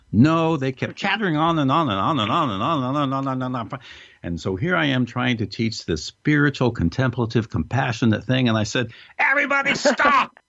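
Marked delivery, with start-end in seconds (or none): 9.1-10.3 acted, very high, shrill, all-out top-of-voice yell. Retelling yelling at a chattering group of psychologists, retelling own yell. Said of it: "Here I am yelling at the top of my voice".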